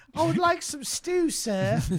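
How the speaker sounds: fake genteel British accent. Joking about imagining a British accent in a Walmart: put-on British accent. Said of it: "I just like to imagine a British accent in a Walmart".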